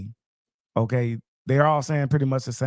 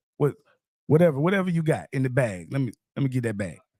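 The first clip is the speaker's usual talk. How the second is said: ordinary talk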